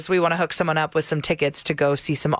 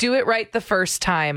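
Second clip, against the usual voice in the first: normal talking voice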